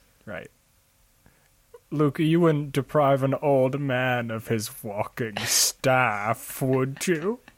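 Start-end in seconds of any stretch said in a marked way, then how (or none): 1.9-7.3 put-on elderly sage character voice. Voicing a character who speaks to Luke; old wizard voice. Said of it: "Great voice work".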